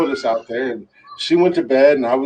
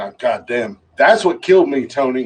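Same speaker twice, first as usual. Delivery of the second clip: normal talking voice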